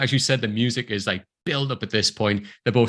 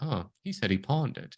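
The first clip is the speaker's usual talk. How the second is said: put-on playful villain voice, quieter; 8 dB quieter than usual. Retelling a moment from a film, imitating Elle's playful tone. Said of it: "Elle's really playful in this moment".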